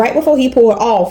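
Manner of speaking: ordinary talk, nothing marked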